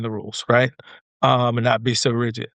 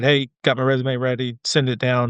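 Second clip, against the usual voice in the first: normal talking voice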